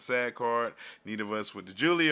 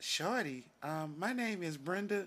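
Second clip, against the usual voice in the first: put-on girl voice, higher and quieter; 7 semitones higher, 9 dB quieter than usual. Acting out a skit opposite a partner, doing a put-on girl voice. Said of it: "I'm gonna do the girl voice then".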